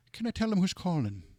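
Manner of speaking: put-on high-pitched Irish accent. Retelling phoning Jim Savis's office and Peggy screening the call: Peggy Medina's Irish accent. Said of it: "she had this great Irish accent".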